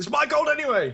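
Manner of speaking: shouting. A player voices their character throwing a half-eaten roll at him, shouting. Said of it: "and I'm shouting".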